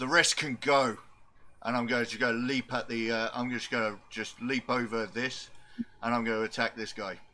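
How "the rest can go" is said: shouting at the top of voice. Playing a character who attacks in a forge: shouting at the top of voice. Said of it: "I'm gonna shout at the top of my voice".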